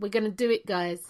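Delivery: ordinary delivery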